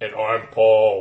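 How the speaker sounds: loud put-on voice, dropped very low. Introducing yourself in a podcast episode intro: deep voice. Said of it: "We're speaking in deep voices".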